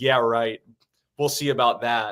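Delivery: ordinary talk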